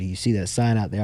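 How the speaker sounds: ordinary delivery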